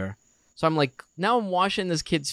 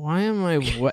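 put-on dazed, groggy child voice. Retelling a child's question while sick: imitating a dazed child. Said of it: "He's, like, out of it".

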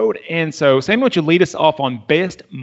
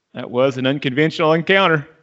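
plain

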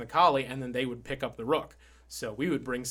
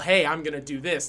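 play-acted loud, shouted call; 2 semitones higher, 5 dB louder than usual. Retelling a teammate's call to make the other team switch: imitating a teammate yelling. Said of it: "So he would just yell".

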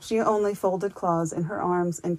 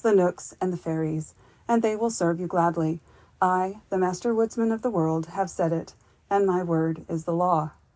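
ordinary delivery, nothing marked

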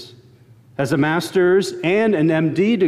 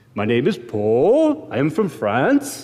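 every phrase lifting upward at the end. Recalling how a professor talked, the speaker does Paul's upward inflection. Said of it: "Everything was upward inflection".

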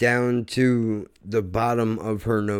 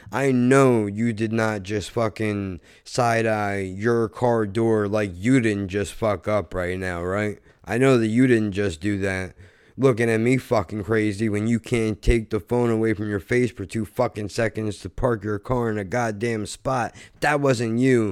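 ordinary talk

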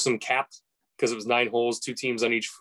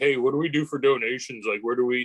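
put-on surfer dude voice. Retelling what a buddy asked about donations, imitating Scott Bones. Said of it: "He's like a surfer dude".

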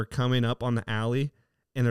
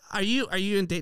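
mock scream, much higher and slower; 8 semitones higher than usual. Retelling a woman screaming a question during a chase, mock-screaming. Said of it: "Like, screaming".

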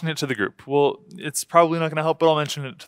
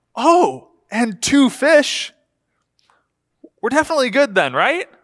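play-acted very high, swooping, utterly sarcastic tone; 10 semitones higher, 5 dB louder than usual. Imagining replying to a disciple's report of five loaves: acting out sarcasm. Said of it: "in just complete sarcasm".

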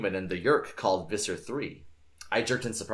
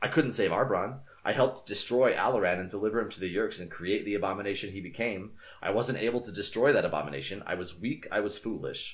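usual speaking voice

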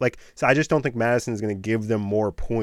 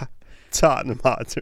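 giggling, laughing through the words; 2 semitones higher than usual. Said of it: "You can't even say it".

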